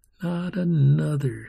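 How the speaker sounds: ordinary delivery, nothing marked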